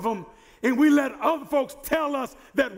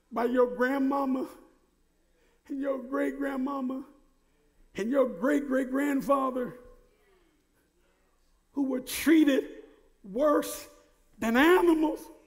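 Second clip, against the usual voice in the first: fighting tears, quieter; 4 dB quieter than usual. A speaker telling a seated audience about their grandparents' suffering, holding back tears. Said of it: "Let me say this without tears in my eyes".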